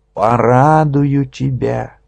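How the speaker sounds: with solemnity. A man turning back from the door to address the other man, solemnly. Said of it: "сказал торжественно".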